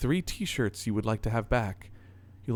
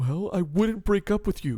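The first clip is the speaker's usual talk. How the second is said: offhand, unhurried, casual lazy drawl; 4 semitones higher, 4 dB louder than usual. Voicing Adam answering what he would say in a breakup: casual drawl. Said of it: "The casual drawl in Adam's voice".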